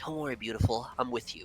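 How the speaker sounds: barely audible, very soft, hushed half-whisper. Voicing sylvan magic that reassures a player: half-whisper. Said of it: "a little whisper of sylvan magic".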